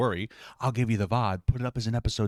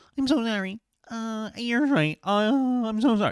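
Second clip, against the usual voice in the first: timid, meek, grovelling, very high-pitched and slow; 13 semitones higher, 4 dB louder than usual. Mocking how someone apologizes while being screamed at: mock meek apology. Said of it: "I'm not gonna sit there and go".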